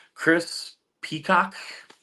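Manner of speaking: slow, drawn-out, sounded-out name. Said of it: "Say that fast".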